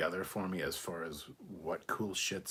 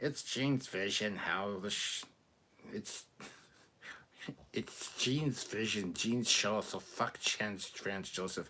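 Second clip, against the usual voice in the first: put-on nerdy voice; 2 semitones higher than usual. Reading out a submitted message aloud, in a Comic Book Guy voice. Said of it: "in a nerd voice".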